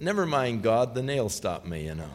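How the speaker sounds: ordinary delivery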